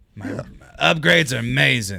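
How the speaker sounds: slow, rough, put-on cartoon-style voice. Repeating a line said in the movie, in Rocket voice. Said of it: "That was good Rocket".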